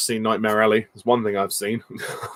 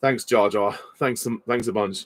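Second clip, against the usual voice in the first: normal talking voice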